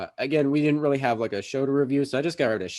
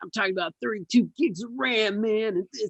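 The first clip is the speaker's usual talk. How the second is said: very high, hyped-up, excited badass boasting voice; 10 semitones higher than usual. Showing how to talk about RAM: excited badass Hackers movie voice. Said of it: "You gotta sound excited as shit and like you're the most badass person".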